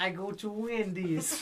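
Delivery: fake Russian accent. Speaker asked by others to do the Russian accent again, bad Russian accent. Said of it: "do your Russian accent again".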